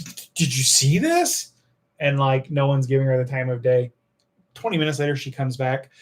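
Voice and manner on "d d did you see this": mocking, indignant girl voice, higher. Retelling a girl at the gate protesting being grabbed: imitating an indignant girl. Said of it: "super indignant".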